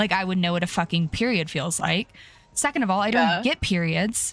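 ordinary delivery

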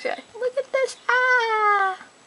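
very high, crazy excited squeal. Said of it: "I'm really crazy right now".

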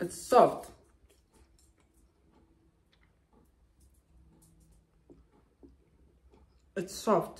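talking with mouth full, chewing. Tasting freshly sliced dombolo, chewing while talking. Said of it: "you can hear the chewing sound".

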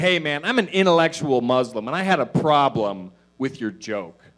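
huffy, annoyed, loud, irritated confrontational delivery. Retelling a complaint from a man after a show: imitating an irritated man. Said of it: "He looks pretty irritated".

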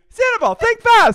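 put-on squeaky mouse voice. Retelling a woman making balloon animals, calling out to a man, Mickey Mouse impression. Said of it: "She's Mickey Mouse".

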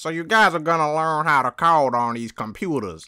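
put-on country accent. A student retells his teacher explaining the coding class on day one, country Squidward voice. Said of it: "He sounded like a country Squidward".

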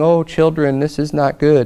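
real soft, gentle, mild-mannered delivery. Mocking a soft-spoken pacifist Jesus scolding gently: mock soft-spoken voice. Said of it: "speaking real softly and going".

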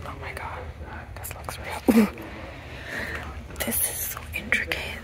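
soft whisper. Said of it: "the more I whisper in this video".

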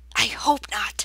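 stage-whispered. Mrs. Frisby answers Jeremy's reassurance before going inside: whispered reply. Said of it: "She whispered back".

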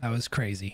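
level, flat, deadpan monotone. Right after barely getting away from guys destroying TVs, monotone. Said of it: "As I say with a monotone voice".

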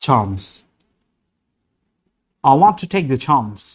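imitated British English accent. Demonstrating words in different accents, imitated british accent. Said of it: "ব্রিটিশ অ্যাকসেন্ট।".

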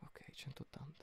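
unvoiced whispering.

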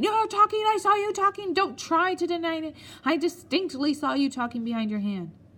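sudden outburst of high-pitched shouting. A captain leaps up and points at the narrator, shouting. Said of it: "pointing at me and shouting".

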